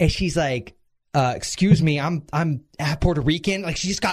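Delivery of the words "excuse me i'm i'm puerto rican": put-on voice with attitude. Retelling a woman's reply about her heritage: imitating someone with attitude. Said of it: "all attitude".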